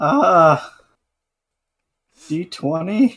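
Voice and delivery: nervous frightened voice. A player, asked for their charm score, answers in a scared voice. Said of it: "Why are you so scared then?".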